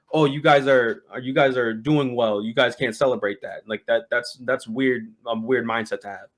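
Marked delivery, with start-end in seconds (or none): none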